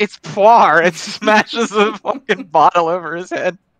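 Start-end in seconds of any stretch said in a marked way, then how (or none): 0.0-0.8 sudden, loud, shrieked screaming outburst. Recounting a show scene where a character screams back: retold scream.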